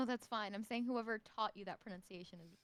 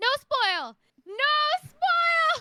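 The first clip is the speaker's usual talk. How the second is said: very loud, shrill, high, full-out shouting; 15 dB louder than usual. Describing how they react when chat threatens spoilers, retelling a yell. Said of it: "I just yell like".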